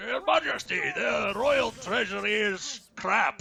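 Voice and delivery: put-on sloppy slurred soundalike voice. Redoing a royal advisor line, slurring more: slurred knockoff Sean Connery voice. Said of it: "sounded sort of slurring it even more".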